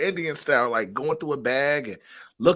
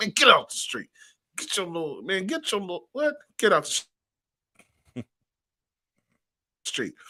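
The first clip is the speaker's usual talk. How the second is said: put-on scolding tone, higher; 4 semitones higher than usual. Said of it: "And that's how I kinda said it".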